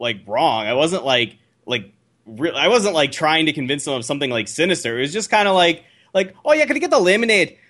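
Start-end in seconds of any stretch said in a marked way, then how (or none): 6.5-7.5 fake Glasgow Scottish accent, high-pitched. Retelling ordering at Disneyland while faking an accent: put-on Scottish accent. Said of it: "I put on a Scottish accent".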